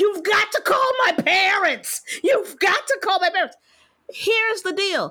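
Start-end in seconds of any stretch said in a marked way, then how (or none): 0.0-3.6 acted-out screaming, toned right down, high, mild. Retelling being given a vaccine and demanding they call parents, retelling a scream. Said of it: "and I was screaming".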